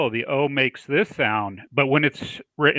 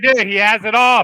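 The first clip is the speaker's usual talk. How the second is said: loud, high call projected as if far off; 8 semitones higher, 5 dB louder than usual. Calling out to someone not in the room: yelling to someone away. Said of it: "I don't know why I'm yelling over there".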